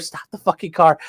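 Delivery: heated, mild, small, held-in scream. Recounting panicking in the car, the speaker re-enacts what they said: retelling a scream. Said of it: "And I start screaming at her".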